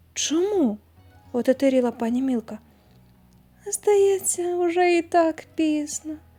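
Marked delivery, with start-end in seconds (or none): 3.6-6.1 moaned. A woman hanging in a man's arms, moaned. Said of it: "простогнала Розалька".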